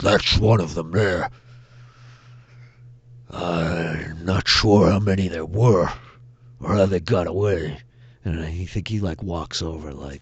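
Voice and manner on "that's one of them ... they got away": loud booming monster voice, drawn-out "I'm". Narrating a scene, voicing the Minotaur as the group approaches, booming Minotaur voice. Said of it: "you hear the booming voice of the Minotaur".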